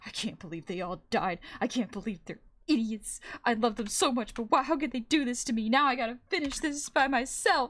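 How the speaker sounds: furious, terrified, rising angry rant. Retelling how the last survivor reacts when friends died: imitating an angry, terrified survivor. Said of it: "angrily and s-, absolutely scared out of their mind go like".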